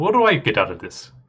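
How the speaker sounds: put-on Russian accent. Voicing a hooded figure asking what he gets: Russian accent. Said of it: "Your best Russian accent".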